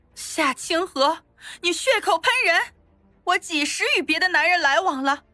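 harsh, bitter, sharp, resentful, high-pitched voice. Kneeling, the accused denies the accusation to the accuser: sharp, resentful. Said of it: "恨恨的看了他一眼，厉声说道".

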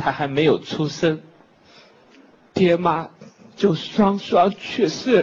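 acted crying while speaking. Hosting a comedy act sentimentally, telling of the performer's parents dying: acted crying while speaking. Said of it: "你别哭".

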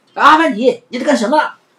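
rushed, hurried, very high-pitched loud yell. The shop owner runs over and calls out to a man, shouting hurriedly. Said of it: "急忙跑过来大喊".

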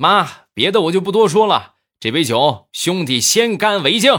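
very high all-out yell. Retelling a groom's toast after the emcee asked him to be louder: retelling a loud shout. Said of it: "当时就大声的又喊了一遍".

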